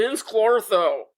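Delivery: character voice, every syllable heavily stressed with full weight. Imitating how the character pronounces his name in the movie: imitating Rick Moranis as Vinz Clortho. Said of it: "he's like".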